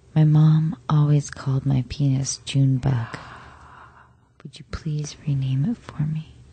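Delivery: whispering sweetly. A guy leans in on a romantic beach night with his date, whispering sweetly. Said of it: "and whispers sweetly".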